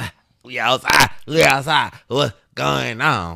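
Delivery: high, drawn-out tipsy drawl. Contrasting her sober and drunk selves, imitating her own drunk self. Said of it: "Drunk, I'm like".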